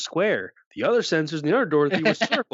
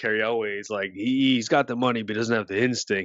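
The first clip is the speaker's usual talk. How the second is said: ordinary talk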